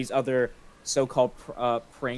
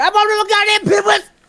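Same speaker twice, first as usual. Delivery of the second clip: put-on angry old man voice, screaming; 14 dB louder than usual. Retelling a favorite video where Angry Grandpa lost his pinwheels: imitating Angry Grandpa screaming. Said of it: "screaming, like".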